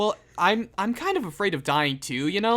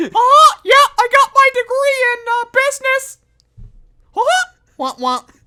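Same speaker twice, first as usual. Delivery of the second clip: very high, shrill, loud cartoon clown voice; 13 dB louder than usual. Playing a clown manager in an imagined office scene, Mickey Mouse-style clown voice. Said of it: "Why'd you do a Mickey Mouse laugh".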